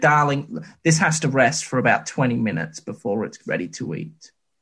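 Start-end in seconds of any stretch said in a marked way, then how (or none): none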